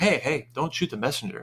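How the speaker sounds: ordinary talk, nothing marked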